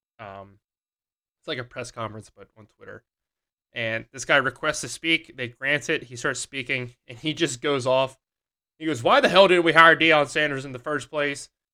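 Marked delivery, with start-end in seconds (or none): 9.0-11.5 very loud, shrill, put-on Southern accent, ranting. Retelling a guy ranting on a Twitter call, in a fake Southern accent. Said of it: "he had a fake Southern accent".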